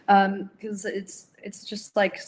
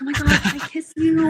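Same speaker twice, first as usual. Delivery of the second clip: play-acted giddy gushing, high, loud, overexcited; 8 semitones higher, 7 dB louder than usual. Retelling how a fan hugged them and asked for a kiss, imitating an overexcited fan. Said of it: "she's like so excited".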